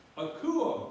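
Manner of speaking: rising pitch on the word kuo. Explaining the acute accent mark, the speaker says kuo with rising pitch on kuo. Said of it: "the sound goes up. ... You're going up in sound".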